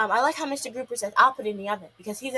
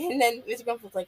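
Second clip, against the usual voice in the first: usual speaking voice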